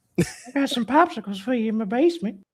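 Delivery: put-on very high, leering cartoon old-man voice. Doing the old pervert from the cartoon: Herbert voice. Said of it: "Herbert the pervert".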